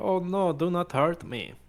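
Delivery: fake pleading cry, loud, high, drawn out. Throwing a magic-altered voice to deceive: magically thrown pleading voice. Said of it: "I'm gonna thaumaturgy my voice right here and say".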